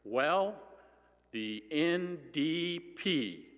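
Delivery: long drawn-out well, each N D P punched. Quoting how he named his party: drawn-out "well", stressed n, d, p letters. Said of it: "he extended out the word well and emphasized each letter of the party name".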